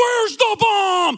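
furious, very loud, high angry yell at full blast. Retelling a TV cliffhanger interrogation scene: imitating Kiefer Sutherland yelling angrily. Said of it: "He's always yelling at him".

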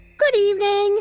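sunny, cheerful bright tone. Opening the caravan door to the frowning old ladies, said brightly. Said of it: "he said brightly".

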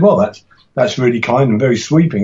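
ordinary talk

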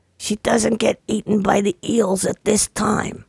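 very slow, rough, creaky, drawn out. Saying a line another speaker asked for: Columbo voice. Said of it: "In the same voice?".

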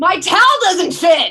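high, very loud, out-of-control, drawn-out yell. Telling listeners a story, the speaker acts out retelling a yell. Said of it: "I just started yelling and I went".

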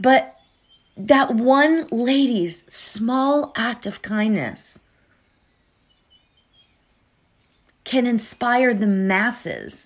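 moved, emotion breaking through. Telling listeners about something that moved you yesterday: getting emotional. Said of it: "why am I getting so emotional about this".

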